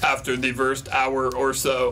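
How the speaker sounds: low, slow stupid robot voice. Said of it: "talking in this stupid robot voice".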